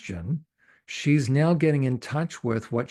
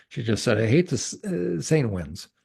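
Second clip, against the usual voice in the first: ordinary talk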